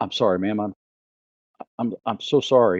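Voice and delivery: shaky, trembling, stammered, on the verge of tears. A man looks over at a woman and apologizes; shaking, near-tears apology. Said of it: "He's physically shaking, and he looks over her going".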